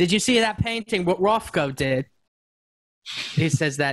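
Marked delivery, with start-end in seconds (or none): 0.0-2.1 put-on British accent. Redoing a lyric line with another painter after being asked: british accent. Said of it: "you should just do this line in that accent".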